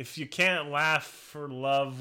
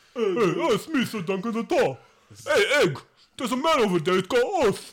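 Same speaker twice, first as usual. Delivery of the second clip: very loud, high, dopey knight bellow; 9 semitones higher, 9 dB louder than usual. Speaker shows how they imagine a character's voice: Sir Duncan the Tall voice. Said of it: "That's how I imagine Sir Duncan's voice".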